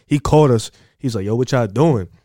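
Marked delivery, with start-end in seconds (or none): 1.2-2.0 imitated Jamaican accent. Retelling the boss calling out to him and his friend, jamaican accent. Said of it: "he had the Jamaican accent".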